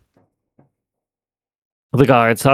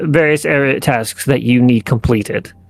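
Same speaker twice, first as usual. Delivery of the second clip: ordinary talk, nothing marked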